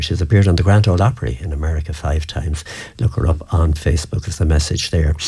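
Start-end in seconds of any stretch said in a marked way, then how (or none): none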